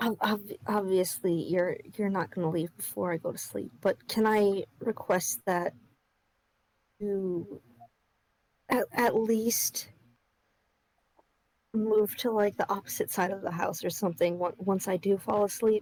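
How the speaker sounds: speaking very quietly, soft voice. Voicing a character who speaks up asking a request: speaking very quietly. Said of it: "he very quietly speaks up".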